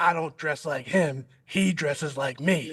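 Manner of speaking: gruff, raspy, slow coach's growl, easing off. Quoting his dad's retort, the speaker imitates his dad's raspy coach's voice. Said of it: "I got to try and do my dad's voice. He's got like a raspy coach's voice".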